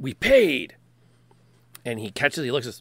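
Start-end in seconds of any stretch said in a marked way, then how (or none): 0.0-0.7 loud, in-character shouting. Voicing a character throwing a bag at a man: yelling in character. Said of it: "Katie yells".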